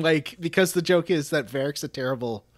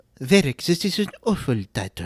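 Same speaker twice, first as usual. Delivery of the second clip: put-on French accent. Retelling a game scene, Cassandra's line to a companion, in Cassandra's French accent. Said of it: "She's got like a French accent, and I know you can do that".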